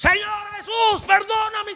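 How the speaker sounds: very high, slow scream.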